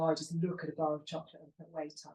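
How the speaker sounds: usual speaking voice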